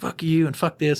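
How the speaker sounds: acted-out angry outburst. Retelling how an arrested man swung between moods: imitating an angry outburst. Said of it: "he's doing the, the, the mood roller coaster".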